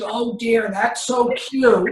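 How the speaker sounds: gravelly, rough speaking voice. Retelling a legend reacting to a Halloween picture, imitating Lucy's rough voice. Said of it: "rough voice".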